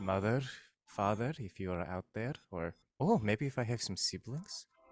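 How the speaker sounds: very hushed, small, soft voice. Voicing a character calling out to lost parents: very quiet voice. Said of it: "he just very quietly says".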